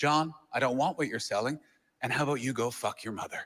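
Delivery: put-on dead calm, fully composed, low delivery. A telemarketer retells how the man on the line answered him, imitating a calm voice. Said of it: "very calmly just went".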